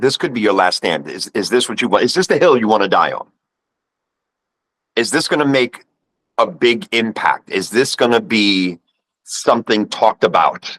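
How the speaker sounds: ordinary talk, nothing marked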